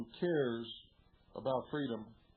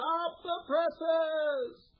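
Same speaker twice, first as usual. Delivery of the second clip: very high, raised shouted yell; 8 dB louder than usual. Describing the newsroom scene from the movies, retelling a yell. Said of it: "he yells".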